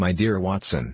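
ordinary delivery

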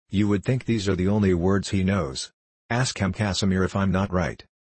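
plain reading voice

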